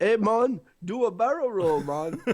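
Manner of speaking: put-on, cartoon-style Jamaican accent. Mocking how cartoon animal characters get accents, Jamaican accent. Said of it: "there's a Jamaican bird".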